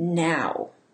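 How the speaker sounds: emphasizing the word 'now'. A speaker shows a phrase with a different stressed word, stress on 'now'. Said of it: "emphasize a different word each time".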